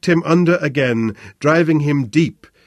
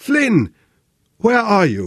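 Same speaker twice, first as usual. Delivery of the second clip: breathless, high, gasping cry; 6 semitones higher than usual. Narrator reading Sebastian, clinging on in the water, calling for Flynn, gasping. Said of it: "he gasped".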